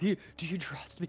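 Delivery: put-on little kid whisper. Playing a character in a game, whispering to another player: little kid whisper. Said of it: "Like whisper".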